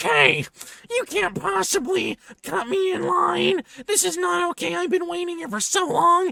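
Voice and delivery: indignant, annoyed, very high-pitched voice. Retelling a woman's complaint about being cut in line: imitating an annoyed woman. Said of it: "she does not like this".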